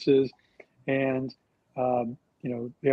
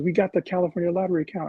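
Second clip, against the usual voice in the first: put-on mock-excited voice, pitched higher; 4 semitones higher than usual. Recalling a phone call when Carol learned they'd won the account, imitating Carol's excitement. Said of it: "she was really excited".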